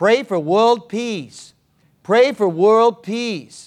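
put-on strong, classic Brooklyn accent. Quoting a lady who always answered a prayer request, in a Brooklyn accent. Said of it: "in her Brooklyn accent".

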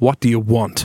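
put-on severe, stern tone. Retelling what a dead man said when he turned around: imitating a stern voice. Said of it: "Like that. Real stern".

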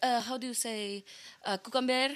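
fake Spanish accent slipping in and out. Imitating Hilaria Baldwin on a morning cooking show: fake Spanish accent. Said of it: "going in and out of, like, a Spanish accent".

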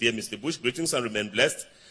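ordinary delivery

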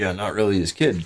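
low, muttered aside to oneself. Retelling a remark once muttered to others: retelling a mutter under breath. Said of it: "under my breath".

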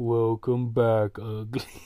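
gloomy, mopey donkey voice. Reading a line aloud for the others, in an Eeyore voice. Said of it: "So I want to do it like Eeyore".

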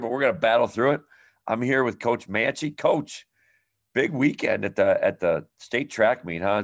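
scratchy, worn-out, raspy, hoarse voice. Podcast host opening an episode and greeting a coach, with a raspy voice. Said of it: "my voice is very raspy this episode here".

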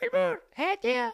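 put-on tiny, very high little-kid voice. A performer imitates children in his audience calling his name: imitating tiny kid voices. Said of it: "con vocecita de microseres".

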